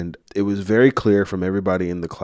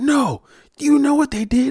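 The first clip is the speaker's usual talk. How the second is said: put-on very high, furious, fuming, raised voice; 5 dB louder than usual. Retelling an argument in the car, imitating a furious mom. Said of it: "My mom is fuming. She's furious".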